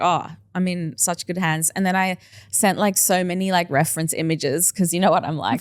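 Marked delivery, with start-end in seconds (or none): none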